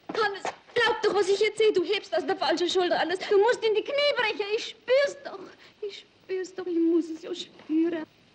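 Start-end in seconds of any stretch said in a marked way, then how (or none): 4.5-6.6 wailing with sobs in the voice.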